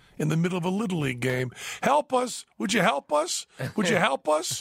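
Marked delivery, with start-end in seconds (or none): 1.8-4.6 play-acted very high, pleading yelling. Retelling a hot air balloon landing at a Little League game: imitating someone yelling for help. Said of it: "he just starts yelling".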